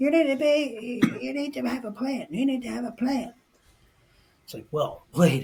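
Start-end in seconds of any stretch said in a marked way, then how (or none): 0.0-3.3 mock nagging, insistent yell, very high and shrill. Retelling a voice in the back insisting on a plan: imitating someone yelling. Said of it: "there's this consistent voice way back in the back yelling".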